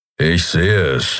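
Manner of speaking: grumpy muttering. He answers while steering the ship toward it, grumbling. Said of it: "brummte er".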